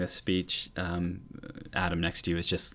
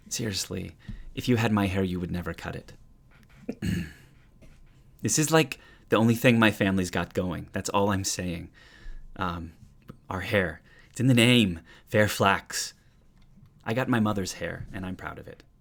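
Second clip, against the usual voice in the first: loud, fed-up, put-upon, exasperated delivery; 6 dB louder than usual. Voicing a character who rolls his eyes while defending his hair: eye-rolling Locke voice. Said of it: "Locke rolling his eyes".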